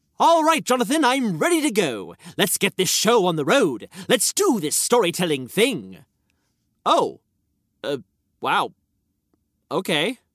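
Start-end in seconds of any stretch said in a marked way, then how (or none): 6.9-10.2 startled, surprised, caught off guard. Reacting to a partner announcing he is ready to go, surprised. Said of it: "you don't need to sound so surprised".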